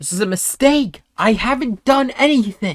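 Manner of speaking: high-pitched, loud screaming. Game master voicing a mage being walked out by guards, screaming in protest. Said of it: "you hear the mage screaming".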